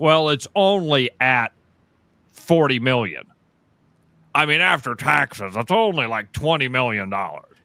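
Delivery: play-acted unimpressed, slow, dismissive brush-off. Recalling an old lottery joke, imitating what people would say. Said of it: "And people would be like".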